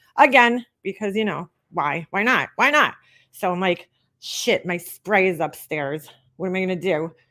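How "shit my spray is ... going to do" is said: plain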